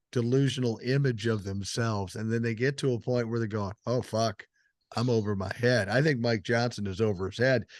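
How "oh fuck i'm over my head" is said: ordinary delivery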